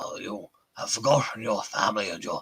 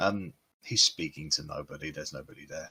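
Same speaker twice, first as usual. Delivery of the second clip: usual speaking voice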